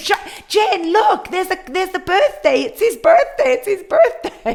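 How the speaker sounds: shrieking, very high-pitched. Retelling reacting to a class on screen: imitating her own screaming. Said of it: "I was screaming at the screen".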